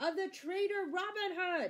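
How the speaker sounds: excited, high-pitched shouting. Worman cuts in after Sir Guy speaks; shouted excitedly. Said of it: "shouted Worman excitedly".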